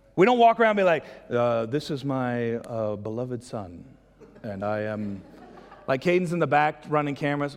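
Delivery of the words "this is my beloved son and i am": very slow, stiff, stilted formal delivery. Mocking how people would sound saying it: mock formal speech. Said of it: "it's formal".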